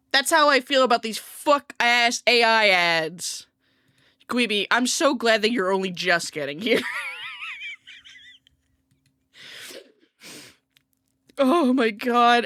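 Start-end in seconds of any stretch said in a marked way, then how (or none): 4.2-12.4 talking through tears, tearful with swooping pitch. Greeting someone who has only just arrived, while crying. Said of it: "I'm I'm crying".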